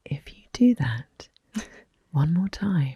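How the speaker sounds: slow, calm, deliberate, hushed, close to the ear. Telling how she gets close to her ear, acting out speaking slowly and calmly. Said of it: "I do it really slowly and calmly".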